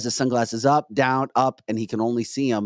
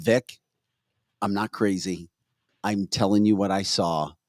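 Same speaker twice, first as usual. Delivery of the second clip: plain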